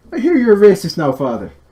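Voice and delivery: high, loud, hoity-toity posh Irish accent. Asked to switch from the yorkshire accent, the speaker improvises a scene: hoity-toity irish accent. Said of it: "Do a bit of a hoity-toity Irish accent".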